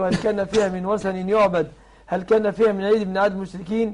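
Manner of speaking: ordinary talk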